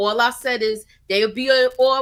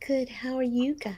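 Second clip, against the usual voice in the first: half-whispery, hushed, soft teacher voice; 8 dB quieter than usual. Repeating a guest's greeting back to her: imitating a quiet teacher voice. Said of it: "You said".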